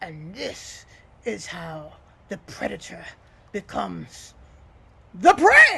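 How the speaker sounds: grim, gnarled creepy voice. Launching at the snake's throat, in a grim, gnarled crypt voice. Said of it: "a grim, scaly, gnarled voice that just sounds like it came half out of a crypt".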